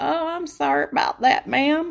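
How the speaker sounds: put-on country accent, very high-pitched twang. Retelling an insurance mix-up, the speaker quotes a woman in a put-on country accent. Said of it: "I don't know why I'm giving her a country accent".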